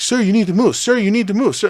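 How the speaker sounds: very high, shrill, insistent repeated yelling. Retelling a woman in a crowded bar ordering him to move: imitating someone yelling. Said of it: "she's fucking yelling at me".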